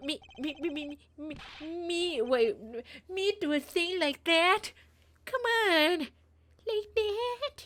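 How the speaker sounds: put-on dumb, stupid-sounding voice. Voicing a character who denies doing something: stupid-sounding voice. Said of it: "I made him sound so stupid".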